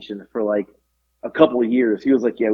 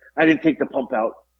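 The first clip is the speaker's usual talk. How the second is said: put-on panicked, frantic voice. Retelling his dad realizing the pump was still in: imitating someone panicking. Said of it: "was in a panic".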